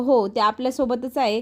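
ordinary delivery

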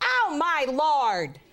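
put-on shocked, freaked-out little old lady gasp. Retelling an audience member's reaction during a show: imitating a shocked little old lady. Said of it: "little old lady about three rows back go".

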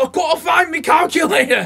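poor put-on Manchester accent. Imagining a Forrest Gump scene with the lead actor swapped out, do a bad Karl Pilkington impression. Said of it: "That's the worst Manchester accent".

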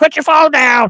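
very high, shrill robotic voice, yelling. Imagining a road sign that yells at drivers: imitating a yelling AI voice. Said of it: "to yell at you in different voices".

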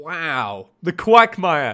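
very loud, cracking voice with a drawn-out wow. Speaker, feeling their voice going, reacts to finding the Quagmire; voice cracking. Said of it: "The voice cracks are real".

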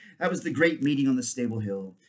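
ordinary delivery

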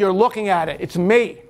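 normal talking voice

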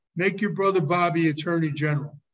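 plain

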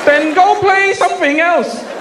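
loud yell in a Chinese-accented man's voice.

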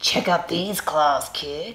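rasping, raspy monster voice. A voice from under the bed speaks to the kid, raspy voice. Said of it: "a third voice came from under the bed and rasped".

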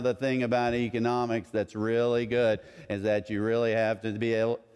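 mock monotone professor voice. Describing an economics professor lecturing the class, imitating monotone professor. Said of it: "In a very monotone voice".

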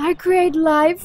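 grandiose, high, slow, booming proclamation voice.

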